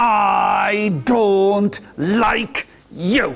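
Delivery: speaking through clenched teeth. Telling a story with children, voicing the mother to the youngest boy: through clenched teeth. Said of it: "put your teeth together".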